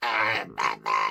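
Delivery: over-squeezed, very low, rough strained throat voice. Showing what happens when the voice is squeezed too much: over-squeezed Dalek-like voice. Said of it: "Don't squeeze your voice too much, turns into a Dalek".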